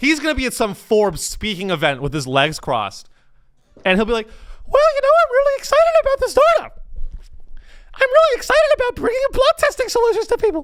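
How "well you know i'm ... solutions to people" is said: very high, loud, squeaky voice. Imitating a startup founder speaking at a Forbes event, in a Mickey Mouse voice. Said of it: "He's going to sound like Mickey Mouse".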